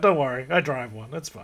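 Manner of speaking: ordinary delivery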